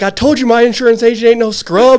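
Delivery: excited, high, loud hype shout.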